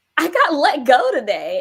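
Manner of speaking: high, loud, speaking through hysterical laughter. Recounting answering a partner who asks if they're okay, retelling hysterical laughter. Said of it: "I'm just hysterically laughing".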